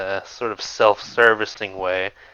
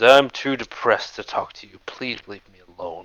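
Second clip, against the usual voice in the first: stately, queenly, regal feminine dragon voice. Voicing a dragon who asks the adventurers to leave: feminine regal dragon voice. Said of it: "she has a distinctly feminine and regal voice as she speaks to you".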